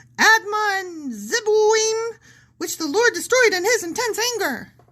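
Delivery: very high-pitched squeaky voice. Reading Bible verses aloud while the other speaker objects; Mickey Mouse voice. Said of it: "you've got to stop with the Mickey voice".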